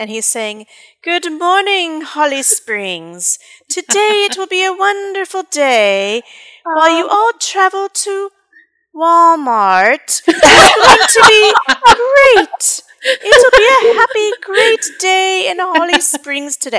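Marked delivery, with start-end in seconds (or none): 1.0-16.8 put-on shrill, loud, booming, sing-song high English accent. Speaker recreates the cruise director's recorded morning greeting, imitating an english accent. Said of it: "our cruise director had an English accent".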